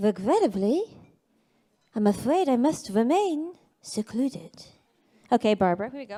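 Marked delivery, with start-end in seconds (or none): 0.0-4.5 put-on newscaster voice, quieter. Going through a list of celebrities, the speaker does a Barbara Walters impression. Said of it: "we've got Barbara Walters".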